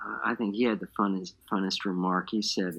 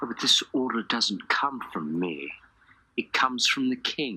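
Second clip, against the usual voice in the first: put-on English accent, worm-tongued voice, fully in character. Recalling a fellow actor who never left character on set, in Wormtongue's English accent. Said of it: "He had to do this English accent".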